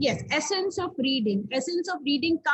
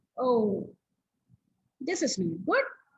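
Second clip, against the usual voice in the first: volume brought right down, soft lowered voice; 3 semitones lower than usual. Speaker demonstrating how to use volume when reading aloud, lowered volume. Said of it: "lowering my volume here".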